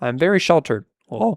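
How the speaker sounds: voice cracking mid-line. Admitting to not getting a joke, voice cracking. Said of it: "Voice crack".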